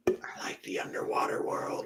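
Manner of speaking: soft, hushed, confiding whisper.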